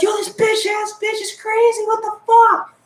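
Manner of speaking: shrill, very high screaming outburst. Retelling a moment of being licked by a classmate: retelling own screaming.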